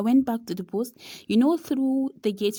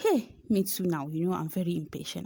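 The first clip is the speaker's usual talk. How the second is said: ordinary talk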